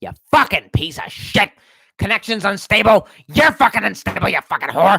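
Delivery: heated, angry rant. Playing an online game, yelling at an unstable connection, yelling angrily. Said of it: "I was yelling at my connection".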